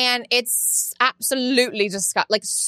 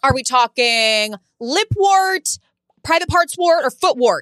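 loud, mock yell carrying far; 2 semitones higher, 5 dB louder than usual. Retelling the store attendant's questions, imitating her yelling to everybody. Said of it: "Yelling to everybody in the store".

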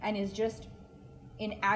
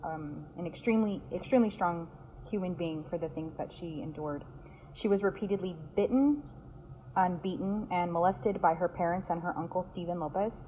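ordinary talk

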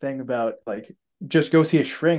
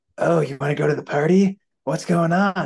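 ASMR-style delivery; 3 semitones higher than usual. Retelling a phone call scene from a film: imitating an ASMR voice. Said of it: "A S M R voice".

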